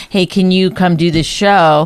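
normal talking voice

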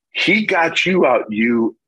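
mock high shouting with full lung power. Pitcher recalls his third baseman shouting to him, retelling Youngblood's yell. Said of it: "He yells, top of his lungs".

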